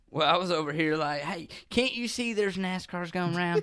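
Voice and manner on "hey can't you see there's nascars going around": put-on Southern US accent. Riffing on watching NASCAR races in a put-on Southern accent. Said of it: "stuck in a Southern accent".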